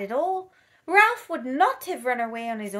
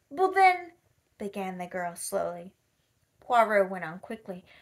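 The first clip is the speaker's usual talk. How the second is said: plain reading voice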